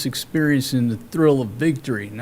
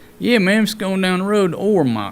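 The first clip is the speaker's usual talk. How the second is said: fake country accent, pitched up; 6 semitones higher, 4 dB louder than usual. Explaining how to say ormoc properly, speaker shows the wrong way: redneck accent. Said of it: "You can't say Ormoc in a redneck accent".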